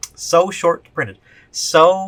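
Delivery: slightly sarcastic, dry and slow. Mocking claims that the set is short printed: a little sarcastic. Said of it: "I'm being a little bit sarcastic".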